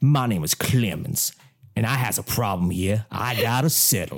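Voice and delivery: put-on Southern accent. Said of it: "Do it one more time".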